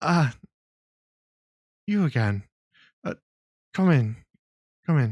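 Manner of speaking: feeble, quavering voice. Behind a locked door, someone answers a knock: weak, almost trembling voice. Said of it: "a slightly weak, almost trembling voice from behind say".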